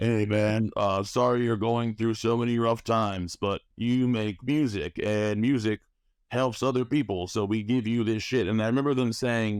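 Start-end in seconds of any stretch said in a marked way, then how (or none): 0.0-8.2 casual, laid-back regular-dude voice. Retelling a vision, imitating the triple-faced gods as regular dudes. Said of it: "I'm gonna do my best impersonation of it".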